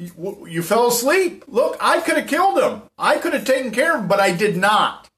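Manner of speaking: high, sing-song, taunting voice.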